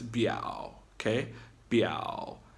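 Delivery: short, low creaky third tone on biao. Teacher demonstrating the third tone for the class, low creaky voice. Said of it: "it hits that low, creaky frog voice".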